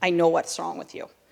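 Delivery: creaky voice with bad Russian accent.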